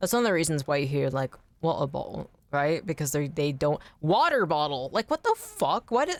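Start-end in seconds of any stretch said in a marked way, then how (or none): 4.0-4.9 exaggerated American accent, hard consonants. Comparing British and American consonants, the speaker demonstrates an exaggerated American accent. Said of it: "American accents are funny as fuck because they have the strongest consonants".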